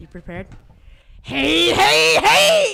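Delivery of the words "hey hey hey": very high, very loud, shrill anime-style shout. Doing an anime character impression for the others, loud anime character impression. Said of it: "my amazing anime impression".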